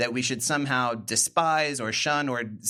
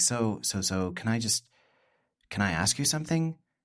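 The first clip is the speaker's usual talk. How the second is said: mock hesitant, stammering, nervous, halting voice; 2 semitones lower than usual. Retelling a late-night backyard question someone asked: imitating a nervous question. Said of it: "sort of nervously".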